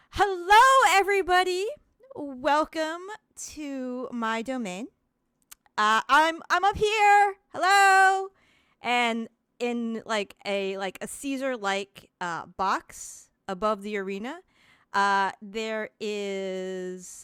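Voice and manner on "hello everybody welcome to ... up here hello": loud, high, carrying announcer voice. Voicing a figure greeting a shocked crowd: voice sounding over an arena. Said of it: "there is a voice that sounds over the arena".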